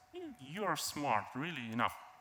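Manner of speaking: ordinary delivery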